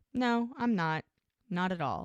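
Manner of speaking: ordinary talk, nothing marked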